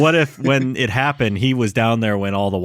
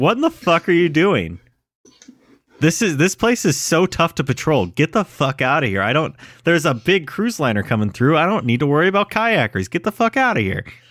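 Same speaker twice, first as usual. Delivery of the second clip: high, cranky, seal-like mild yell; 6 semitones higher than usual. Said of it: "He's, like, yelling".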